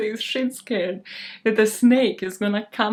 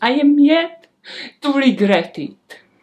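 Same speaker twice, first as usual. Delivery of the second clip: slowed-down, Russian-sounding accent; 4 semitones higher, 6 dB louder than usual. Repeating a line about not regretting being petty, sounding Russian. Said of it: "Sounded Russian there".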